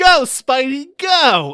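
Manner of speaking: mocking bad line delivery. Retelling a movie bystander's line, imitating a terrible line read. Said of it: "And it's just a terrible read".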